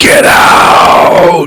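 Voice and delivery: unearthly, ghostly, otherworldly voice. Storyteller voices a little girl speaking to the players: otherworldly voice. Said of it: "with like this otherworldly voice".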